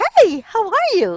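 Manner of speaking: bubbly, thrilled, excited, very high and loud. Demonstrating pitch inflection with an example line, showing excitement. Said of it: "Showing excitement".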